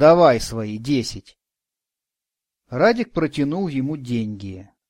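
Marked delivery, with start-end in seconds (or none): 0.0-1.4 condescending, patronizing, lower, louder, slower. Narrating, the shop owner agrees to take a customer's ten roubles, condescendingly. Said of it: "снисходительно кивнул он".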